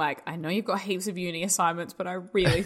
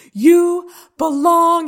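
very loud, very high yelling scream; 11 semitones higher, 12 dB louder than usual. Retelling a movie scene of a man in a phone box, imitating a scream down the phone. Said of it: "He's like screaming down the phone".

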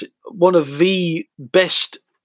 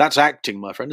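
normal talking voice

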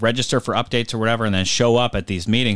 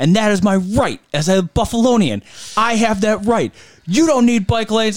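screaming rant, higher and louder; 12 semitones higher, 5 dB louder than usual. Retelling a man at a meeting yelling at the crowd: imitating someone screaming. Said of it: "starts screaming at the rest of the crowd".

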